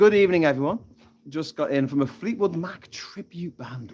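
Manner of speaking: plain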